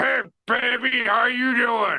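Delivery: high, slow wolf-whistle catcall tone.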